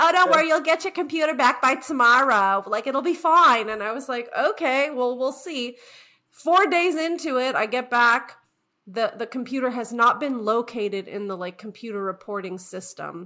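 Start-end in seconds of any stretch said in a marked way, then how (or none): 0.0-3.7 put-on loud, sympathetic New Jersey accent. Retelling sympathetic fellow plane passengers' reassurance, imitating a new jersey accent. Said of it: "with their new jersey accent".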